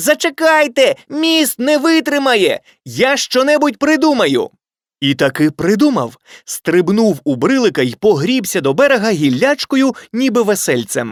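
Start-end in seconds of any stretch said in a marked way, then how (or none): 0.0-4.5 high-pitched, loud shouting. A little ant calls to friends about to cross a bridge: shouting. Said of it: "Муравчик закричав".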